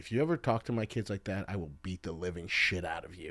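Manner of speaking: threatening, menacing voice. Retelling what a dad said to two men behind: imitating a threatening voice. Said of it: "in a voice where it's, like, threatening".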